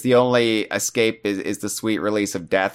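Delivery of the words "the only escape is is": usual speaking voice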